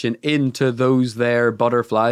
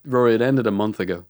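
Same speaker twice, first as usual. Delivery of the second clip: normal talking voice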